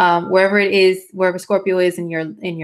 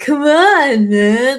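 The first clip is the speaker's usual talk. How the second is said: mock spaced-out stoner drawl, raised and high; 6 semitones higher, 5 dB louder than usual. Describing the always-high friend from Half Baked: imitating a stoned guy. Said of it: "like always high".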